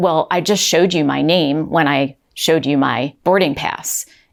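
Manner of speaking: play-acted rude, unkind tone. Retelling a passenger answering an agent who asked his name, imitating a rude tone. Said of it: "in a tone like that".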